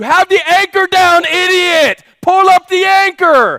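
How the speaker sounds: very high, loud, shrill, booming yell. Recounting what they shouted at him that day: retelling a shout. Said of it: "I'm yelling and I'm shouting".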